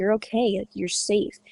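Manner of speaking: normal talking voice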